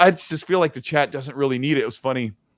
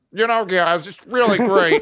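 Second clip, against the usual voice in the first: mocking, higher-pitched annoying voice; 6 semitones higher than usual. Imitating how own voice sounds in voice notes: imitating own annoying voice. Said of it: "That's what my voice sounds like to me".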